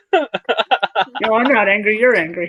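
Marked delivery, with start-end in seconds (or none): none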